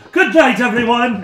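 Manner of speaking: smug, high and loud showman delivery.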